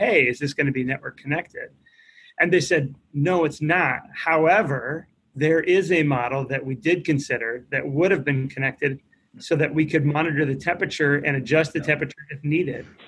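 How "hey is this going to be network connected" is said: put-on joking tone. Retelling a quip to the nursing home administrator who brought a bathtub, joking question. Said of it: "I jokingly said".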